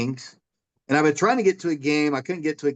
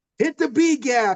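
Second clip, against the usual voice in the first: mock yelling, much higher pitch; 10 semitones higher than usual. Retelling yelling advice to the coach from the stands, retelling own yell at coach. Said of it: "I'm yelling from the stands".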